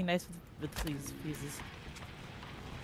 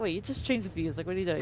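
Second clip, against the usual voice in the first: ordinary talk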